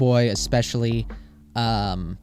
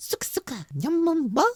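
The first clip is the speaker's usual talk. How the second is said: put-on professor voice, much higher; 6 dB louder than usual. Asked by a viewer for a Professor Egad impression, trying it for the first time: Professor Egad impression. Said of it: "that's my best impression".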